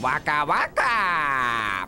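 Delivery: words stretched out long. Trying a voice after admitting it is hard: Fozzie impression. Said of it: "I can't really do, like, a Fozzie".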